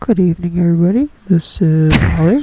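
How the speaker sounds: very loud flight attendant cabin announcement voice. Opening a live broadcast, the host greets everybody like a flight attendant. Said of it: "You sound like you're a flight attendant".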